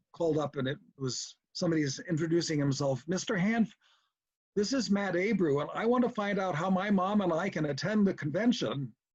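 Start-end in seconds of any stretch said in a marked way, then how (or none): 3.1-8.9 small, high, piping little voice. The registrar retells a phone call about attending the convention, in Matt Abreu's high, pipey little voice. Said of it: "pipey little voice".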